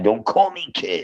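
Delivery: play-acted angry, indignant, mad, riled-up delivery. Retelling how a friend complains about being called kid: imitating someone getting mad. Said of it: "And he gets all mad".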